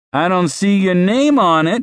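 high, mocking, sneering voice. Reading a story; a character pockets someone else's cash and answers, sneering. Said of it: "Graham sneered".

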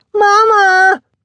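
very high, very loud, shrill, drawn-out scream. Reading a story, the girl calls out to her mother: screamed. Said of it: "she screamed".

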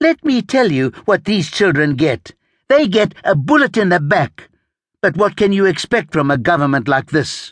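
voice building and climbing as it goes. A woman speaking out against the government to officials, her voice rising. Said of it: "Her voice was rising".

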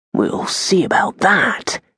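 muttered under the breath. A man replies to his friend's report about armed visitors, muttered. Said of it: "Hugo muttered".

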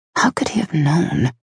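soft, quiet delivery. Reading a novel, a character alone in an empty office, asking quietly. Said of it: "she asked quietly to the empty office".

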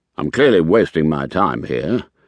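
plain reading voice

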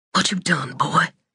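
confiding, hushed tone. Narrator reads a mother questioning her son in the doorway, in a hushed voice. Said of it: "she asked in a hushed voice".

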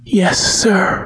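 out of breath, barely voiced, breathless. A narrator reads a woman's reply to a man speaking into her ear: breathless. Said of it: "she said breathlessly".

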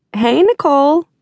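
very high, bright, cheerful, sunny voice. A narrator reads a character greeting another character, bright. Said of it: "AJ said brightly".

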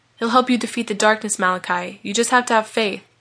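ordinary delivery

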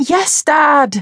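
very high laughing voice. A daughter answers her father on a phone call, laughing. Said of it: "Alice laughed".

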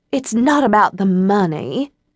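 lofty, haughty, slow and superior tone. A girl from a wealthy family answers her friends' question, in a superior tone. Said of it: "said Eliza in a superior tone".

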